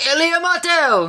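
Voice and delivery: very high-pitched yelling out. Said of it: "some people would sort of be yelling out".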